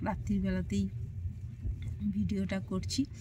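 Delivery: very soft, hushed voice. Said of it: "খুব আস্তে আস্তে ফিস ফিস করে কথা বলছি".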